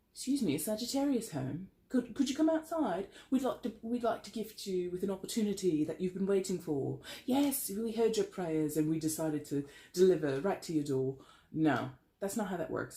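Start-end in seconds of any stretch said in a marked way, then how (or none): 0.2-11.2 put-on British accent throughout. Acting out higher powers knocking with a gift: British accent.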